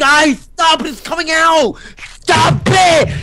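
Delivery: shrill, very high, loud, boiling-over rage voice. While a friend teases them on a webcam call, the speaker tells everyone to stop, rage voice. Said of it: "eventually I get into my rage voice".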